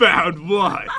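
put-on grumpy voice. Mimicking the other speaker's reply: imitating a grumpy tone. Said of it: "You sound so grumpy about it".

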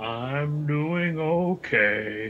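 gloomy, glum, heavy, slow, dragged-out donkey voice. Answering Tass, who asks how everyone is doing: Eeyore voice. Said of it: "In my very best Eeyore voice".

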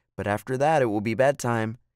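ordinary delivery

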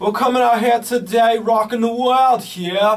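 high, loud put-on British accent.

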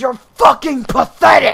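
shrieked, very loud, high-pitched screaming. Quoting the voice line when shot by a teammate: imitating a game character screaming. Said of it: "the guy screaming".

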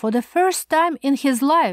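ordinary delivery, nothing marked

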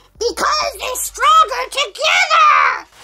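shouted out loudly, yelling. Answering why a spell needs a potion: yelling. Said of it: "Why are you yelling at me?".

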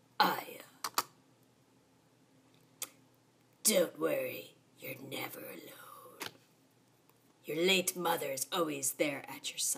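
suspicious-sounding, shady tone. Voicing a father character answering his scared child: sketchy voice. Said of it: "I'm gonna give him a sketchy voice".

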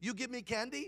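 bad Vietnamese accent, soft and high. Quoting a man's words in a story told to listeners, in a vietnamese accent. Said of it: "I'm going to try to do a Vietnamese accent".

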